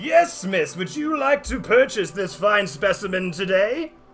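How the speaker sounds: auction caller voice. Voicing the Master of Ceremonies selling at an auction: Master of Ceremonies voice. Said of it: "doing the Master of Ceremonies looks down at you and goes".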